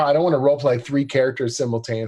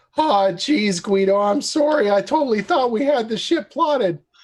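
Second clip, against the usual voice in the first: put-on nervous teenage voice, higher pitch; 9 semitones higher than usual. Voicing a navigator character with the voice of Morty. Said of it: "he's got the voice of Morty".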